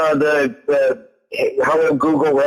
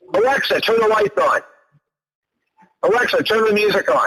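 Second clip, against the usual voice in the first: mock, firm, commanding tone; 5 semitones higher than usual. Retelling how he spoke to alexa on walking in: imitating someone giving direct orders. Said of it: "He said it as a direct order".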